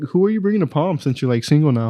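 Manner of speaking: normal talking voice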